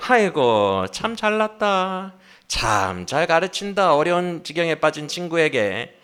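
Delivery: soft, slow, sarcastic mock-admiring tone. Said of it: "그래서 비꼬는 거예요".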